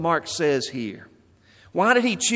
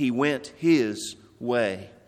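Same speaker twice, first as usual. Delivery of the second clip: slow, with "his" stressed. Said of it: "the emphasis is on his".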